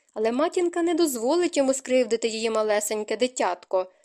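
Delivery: plain reading voice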